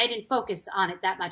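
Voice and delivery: ordinary delivery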